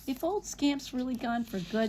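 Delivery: ordinary delivery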